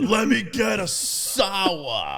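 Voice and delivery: animated, sour, drawn out, loud, swooping delivery. Retelling how Chris orders when he walks in, imitating Chris. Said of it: "he's like".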